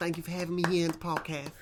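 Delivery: put-on refined, mannered, genteel and polite voice. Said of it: "what is that voice? It was like [name]".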